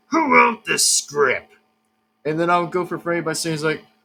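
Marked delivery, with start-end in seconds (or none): 0.1-1.5 put-on pirate voice. Doing an impression of Foxy asking the question. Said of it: "by Foxy's impression".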